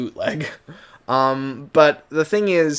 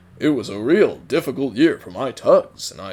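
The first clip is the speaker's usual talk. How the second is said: round, upbeat, jolly, jovial voice; 3 semitones lower than usual. Showing how a character should not sound: Santa Claus-like jovial voice. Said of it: "that's too round, that's too upbeat and jovial, too Santa Clausy".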